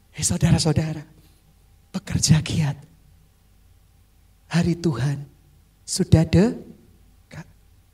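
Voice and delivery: very deep, low, tender, loving tone. Retelling the apostle's words to the brothers, in Paul's loving intonation. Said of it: "intonasi yang penuh kasih".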